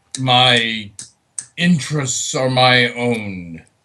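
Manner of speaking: loud, rumbling fiend voice. An archfiend answers adventurers asking why it follows them: rumbling voice. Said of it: "in a rumbling voice".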